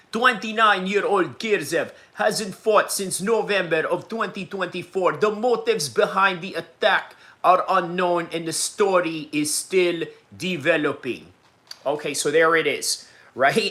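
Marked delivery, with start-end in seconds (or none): 0.2-11.3 put-on Russian accent in TV newsreader style. Reading a news report aloud, in a russian newsman accent. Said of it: "did a little uh, Russian newsman accent".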